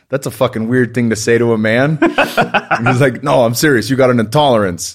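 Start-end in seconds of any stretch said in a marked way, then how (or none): 3.2-4.9 put-on heavy, thick New York accent. Quoting a man who told him something, in an imitated thick New York accent. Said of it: "he's got a thick New York accent".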